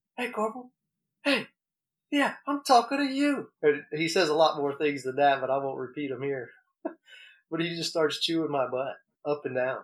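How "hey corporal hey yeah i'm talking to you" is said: mock very high, barking drill sergeant yell. Retelling how a sergeant yelled at him as a corporal, imitating the yell. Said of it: "starts yelling".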